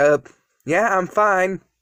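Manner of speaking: ordinary delivery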